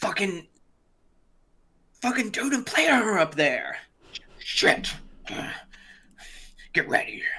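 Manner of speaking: harsh, muffled whispering. A figure up above is overheard by the twins: muffled harsh whisper. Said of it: "the muffled like harsh whisper".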